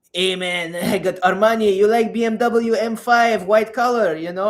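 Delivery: clumsy put-on Persian accent. Describing a Persian guy in the club driving a BMW, attempted Persian accent. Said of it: "I can't do Persian accent".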